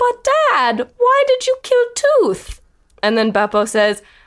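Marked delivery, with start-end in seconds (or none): 0.0-2.6 very high-pitched character voice. Retelling a line from a childhood home movie: Pong Fong voice. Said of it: "But he goes".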